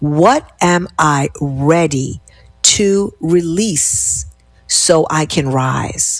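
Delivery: very slow, deliberate, each word weighed. Guiding listeners through a reflection question, spoken slowly. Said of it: "I'm going to say that slowly".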